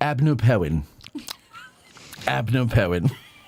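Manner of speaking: slow, garbled, mushy words, mouth full. Speaking to an audience while eating jelly bellies: talking with mouth full. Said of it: "while I have a mouthful of jelly bellies".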